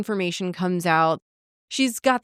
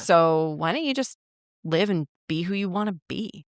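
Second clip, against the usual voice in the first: put-on, sweetly spoken tone. Retelling a character's advice to her, imitating a sweet tone. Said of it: "he says it in such a sweet way".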